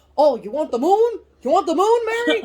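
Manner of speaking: put-on impression voice that sounds like a horse. Quoting Jimmy Stewart offering the moon: Jimmy Stewart impression, sounds like a horse. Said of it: "He sounds like a horse".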